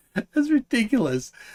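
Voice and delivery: high-pitched, put-on, mocking, scoffing, incredulous voice.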